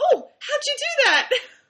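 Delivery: mock amazed surprise, very high, loud squeal.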